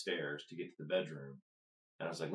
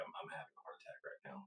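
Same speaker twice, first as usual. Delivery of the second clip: mock dead calm, hushed, near whisper. Retelling what they said to the front desk lady, retelling a calm statement. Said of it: "I say it completely calm".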